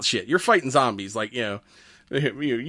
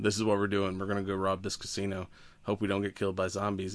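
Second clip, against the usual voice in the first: mock-monotone, flat, no range, lower and quieter; 6 semitones lower, 11 dB quieter than usual. Mocking a movie lead's team speech, the speaker imitates his monotone delivery. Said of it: "he was so monotone".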